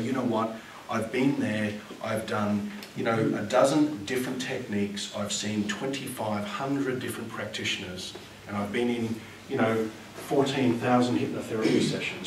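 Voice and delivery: ordinary talk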